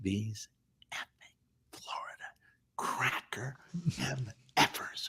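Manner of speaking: slow, fed-up, frustrated whisper under the breath. Retelling what they said to their buddy Scott at the game, whispering. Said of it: "I'm whispering it".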